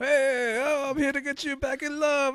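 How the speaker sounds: very high, slow put-on old-school Mexican accent. Retelling what someone said while playing a game, in an old-school Mexican accent. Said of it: "does a very old school Mexican accent".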